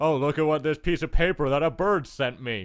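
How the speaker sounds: put-on sarcastic reading. Retelling how other players read out the ad, imitating sarcastic reading. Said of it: "in, like, a sarcastic way where they're like".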